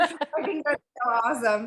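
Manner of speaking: giggly, amused, laughing delivery. Reacting to another speaker's answer about a name, laughing while talking. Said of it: "I'm still laughing".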